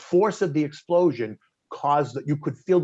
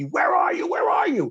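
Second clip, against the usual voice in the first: mock, very high, shrill, repeated screaming; 14 semitones higher than usual. Retelling a phone call where Evelyn was crying, imitating Evelyn screaming at the speaker. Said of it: "she starts screaming at me".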